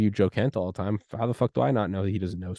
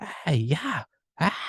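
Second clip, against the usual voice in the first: mock high, mild yelling, sounding far-off; 7 semitones higher than usual. Retelling what a stranger outside the window was doing: imitating someone screaming. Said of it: "they're screaming, like".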